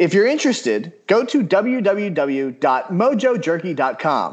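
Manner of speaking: smooth, polished radio announcer ad read. Reading an ad for a jerky company, in a radio announcer voice. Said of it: "Do you like that radio voice right there?".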